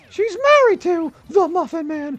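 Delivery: very high, shrill, loud belted cartoon voice. Showing off an old impression he used to do well, in Gingerbread Man voice. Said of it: "I used to do a really good job with Gingerbread Man's voice too".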